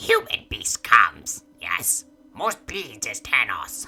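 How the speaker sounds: loud creature voice, pitch swooping widely, pushed out. Game narrator voicing a creature speaking inside the players' heads: Vithrak creature voice. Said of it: "You hear a voice in your head".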